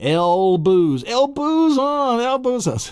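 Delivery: full-on shrill yelling, very high-pitched. Demonstrating a memory association, the speaker starts yelling. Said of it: "start yelling".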